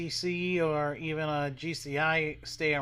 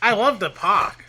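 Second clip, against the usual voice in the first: very loud, high, strong Boston accent; 5 semitones higher, 13 dB louder than usual. Chatting with a co-host about an amusement park, in a boston accent. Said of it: "I just sounded so Boston".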